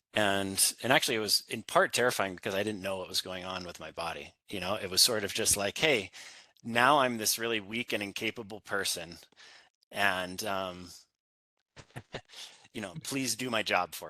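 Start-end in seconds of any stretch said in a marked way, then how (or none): none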